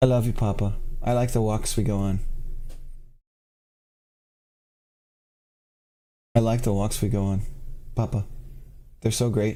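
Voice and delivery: happy, doting, gushing put-on dog voice. Voicing the dog who looks up lovingly: happy put-on dog voice. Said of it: "he's looking at me real happy like".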